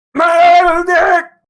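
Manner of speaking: distorted glitchy yell, very high, very loud, stretched. Imitating a meme video's distorted call: YouTube Poop distorted yell. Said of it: "sounds YouTube pooped and fucked up".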